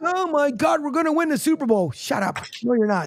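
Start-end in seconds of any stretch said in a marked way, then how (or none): 0.0-1.9 acted-out overexcited, hyped, high-pitched outburst. Mocking fans calling in to the radio: imitating an excited fan caller. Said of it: "Philly faithful will probably call in".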